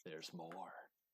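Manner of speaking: dead serious, very deep, low and hushed. Showing how the catchphrase should be said: very serious voice. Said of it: "you gotta do it in a very serious voice".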